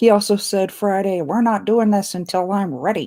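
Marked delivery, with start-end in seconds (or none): 1.2-3.1 teasing, ribbing, mocking voice. Imitating what another speaker said on Friday: mocking imitation of another speaker. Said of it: "that is not how I sound".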